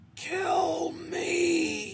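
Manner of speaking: very high, pained, hoarse rasp, "me" drawn out. A creature in pain looks up at him and speaks: rasping. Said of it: "it rasped".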